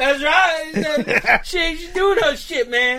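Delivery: high, shouted put-on old man voice. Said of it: "The guy he was talking to was like".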